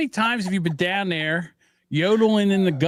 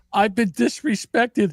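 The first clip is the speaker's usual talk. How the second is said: mock crying, higher; 4 semitones higher than usual. Retelling what a crying customer says at customer service: imitating someone crying.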